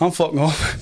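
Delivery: put-on Scottish-accented delivery. Retelling what a man in a picture said: Scottish accent. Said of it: "in a Scottish accent".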